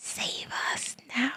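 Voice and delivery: slow, hushed, pleading whisper.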